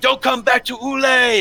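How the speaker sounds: very high, drawn-out screaming and shouting. Voicing the fishermen driving off the pirates: shouting and screaming. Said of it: "they're shouting and screaming".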